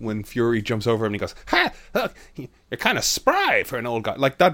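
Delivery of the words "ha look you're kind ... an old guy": cartoony, larger-than-life, high swooping voice. Retelling a line from an animated show: imitating a cartoonish character voice. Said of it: "that voice was like, ... cartoon or character or energy".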